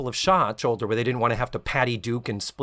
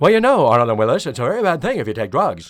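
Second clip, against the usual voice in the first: mush-mouthed, blurred words run together, raised and loud; 7 dB louder than usual. Showing your co-host how you always found him to talk, do a mush-mouthed Conrad Bain impression. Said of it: "just a little bit mush mouth".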